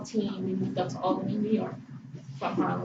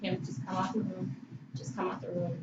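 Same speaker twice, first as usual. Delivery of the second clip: nice, calm, gentle, soft coaxing tone; 5 dB quieter than usual. Retelling how a man told a woman to come out of the room, imitating a nice calm soft voice. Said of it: "He was saying it in a nice, calm, soft voice".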